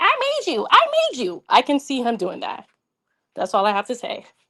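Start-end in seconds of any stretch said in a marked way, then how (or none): 0.0-1.4 very high-pitched, slow squeaky voice. Speaker imagines Quad saying this about her, in Quad's little squeaky voice. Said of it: "with his little squeaky voice saying".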